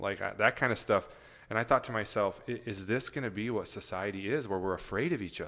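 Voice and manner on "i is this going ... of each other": plain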